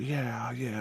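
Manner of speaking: quiet soft voice.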